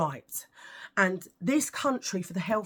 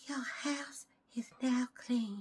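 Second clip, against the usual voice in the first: tiny, very quiet, soft, slow voice; 3 semitones higher, 9 dB quieter than usual. Quoting the little woman from an eighties film to listeners, do the Poltergeist woman voice. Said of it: "And she talks like that".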